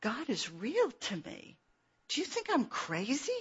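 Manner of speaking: acted whisper. Retelling confiding a secret to Jackie: imitating own whisper. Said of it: "I got real close and I whispered".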